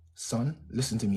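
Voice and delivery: low, soft, calm, gentle motherly voice. Retelling how their mum would sit them down and talk; imitating mum's calm talk. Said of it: "talk to me like this".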